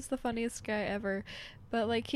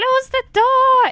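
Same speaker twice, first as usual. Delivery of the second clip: angry bark, very high-pitched and very loud; 14 semitones higher, 18 dB louder than usual. Imitating Germans speaking English: imitating Germans sounding angry. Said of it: "even when they speak English, they're like".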